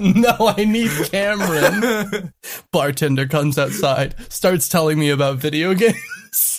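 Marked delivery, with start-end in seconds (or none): 0.6-2.3 slow, bad fake American accent. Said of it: "you can't do an accent".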